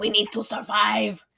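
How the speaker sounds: put-on heavy, laid-on, thick Eastern European accent. Describing a family, speaker quotes the dad in a thick eastern european accent. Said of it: "the dad in his thick Eastern, European accent is like".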